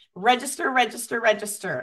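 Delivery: ordinary delivery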